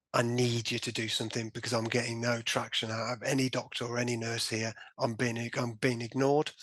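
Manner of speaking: ordinary talk, nothing marked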